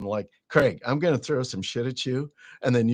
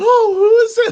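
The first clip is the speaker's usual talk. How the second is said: put-on very high, very loud teen-girl squeal; 12 dB louder than usual. Describing someone eager for group-chat drama, imitating a teenage schoolgirl. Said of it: "like some little teenage high school girl".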